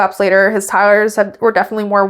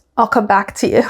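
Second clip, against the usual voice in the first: usual speaking voice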